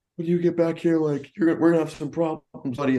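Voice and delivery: very high-pitched, furious, top-of-the-lungs screaming. Retelling how a friend chased a kid with a gun: imitating Tommy screaming. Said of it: "Tommy's screaming at the top of his lungs".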